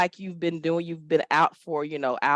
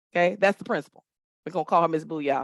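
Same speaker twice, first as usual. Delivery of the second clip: ordinary talk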